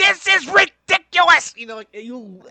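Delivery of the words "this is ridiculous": very loud, rough, shrill, scraping rasp. Showing how hard a comedian's voice is: Gilbert Gottfried impression. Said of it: "you have to be even more rough".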